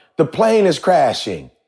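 heavy, stretched-out Southern US drawl. Retelling what a woman passenger said on a plane: imitating a southern drawl. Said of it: "she got the southern drawl".

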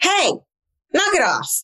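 very high, mock firm, no-nonsense tone. Narrator recounts a woman stepping in front of a dog: firm, I-mean-business voice. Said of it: "said in a firm, I mean business voice".

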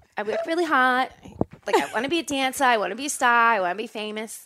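put-on high Detroit accent. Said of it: "That's what she started out talking like".

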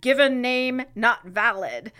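ordinary talk, nothing marked

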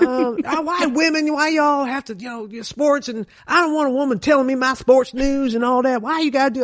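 high, mock gruff and grumpy male voice.

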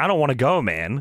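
slow, tearful, broken-up crying voice. Retelling a wrestling promo where the wrestler breaks down: imitating Daniels crying. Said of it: "he starts, like, crying".

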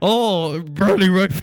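put-on loud announcer voice. Imitating how early-round U S Open Cup announcers sound: imitating a loud close-mic announcer. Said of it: "all of them are like".

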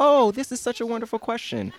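very high-pitched, sweet-as-can-be voice. Describing an Amanda Bynes sketch, doing Amanda Bynes's sweet voice. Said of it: "in this very like sweet voice".

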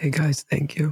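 gentle soft-spoken voice. Greeting podcast listeners and thanking them: soft voice. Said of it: "when you do the soft voice".

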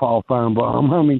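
ordinary talk, nothing marked

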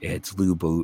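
plain

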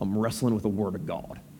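half-joking put-on very deep, soft voice. Dad answers his son Winston at the kitchen table: funny half-joking voice. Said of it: "in a funny voice".

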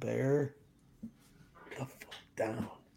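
very quiet, slow, drawn-out hushed whisper. Reading out the words printed on a hoodie, whispering. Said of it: "you whispered it as if that mattered".

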